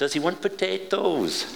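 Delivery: put-on soft, high-pitched Welsh accent. Retelling a woman at the table asking about him, Welsh accent. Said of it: "in a Welsh accent".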